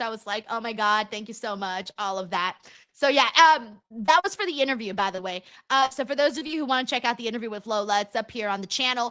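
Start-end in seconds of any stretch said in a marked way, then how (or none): 0.5-1.9 mock-bashful gushing, put-on, lower pitch. Retelling her reaction to Lola during an interview, acting out bashful thanks. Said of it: "I blushed".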